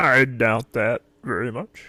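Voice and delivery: booming put-on character voice, very loud. Trying to recall a character's line from memory, Larry impression. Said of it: "I was trying to do Larry's voice".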